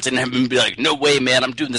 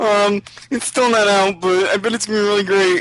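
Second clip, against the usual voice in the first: high, nasal voice; 8 semitones higher than usual. Imitating the other speaker hosting the episode alone: nasal Tiggs impression. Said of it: "this is my Tiggs impression".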